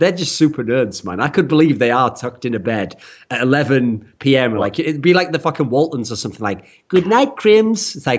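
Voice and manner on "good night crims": clumsy fake Swedish accent, pitched up. Imagining nerdy band members saying good night in bed, bad Swedish accent. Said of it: "I can't do an accent in Swedish".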